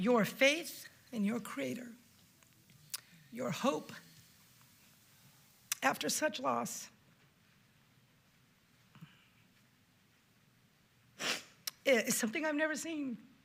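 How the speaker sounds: emotional, deeply moved, struggling to continue. Addressing someone about their faith after great loss, overcome with emotion. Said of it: "Forgive me".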